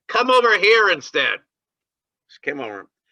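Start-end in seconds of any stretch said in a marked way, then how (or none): 0.1-1.4 acted, very high, loud shouting voice. Retelling screaming back across the drop-in center to a woman, retelling own scream. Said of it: "I screamed back".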